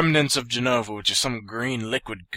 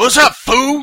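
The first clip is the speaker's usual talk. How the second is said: very high-pitched, very loud, shrill hollering voice; 13 semitones higher, 11 dB louder than usual. Echoing a character's opening line, imitating Barrett's voice.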